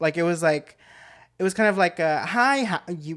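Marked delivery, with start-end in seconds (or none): 2.2-3.2 fake-nice, fake-polite, insincere tone. Retelling a quick call with a caller: imitating a fake polite tone. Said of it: "her tone sounded fake".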